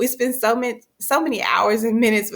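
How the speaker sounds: words interrupted and broken up by laughter. Talking to viewers about teachers as a partner comes back: laughing while talking. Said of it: "I'm sorry guys, I'm laughing".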